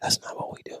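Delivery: barely audible, quiet, breathy whisper. Retelling how a friend calmed him down: imitating a friend whispering. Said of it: "He comes up and whispers".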